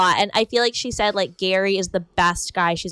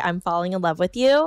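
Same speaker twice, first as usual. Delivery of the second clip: normal talking voice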